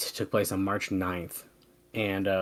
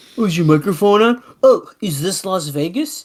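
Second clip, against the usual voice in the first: high, loud, ribbing, mocking tone; 7 semitones higher, 5 dB louder than usual. Retelling how Bob has been mocking the microphone: imitating Bob mocking. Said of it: "Bob's shitting all over me".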